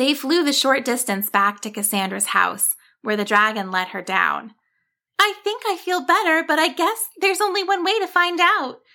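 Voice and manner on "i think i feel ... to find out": bright, cheery, cheerful voice pitched way up. Cassandra, set down at her house, speaks to the dragon, cheerful. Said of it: "Cassandra said cheerfully".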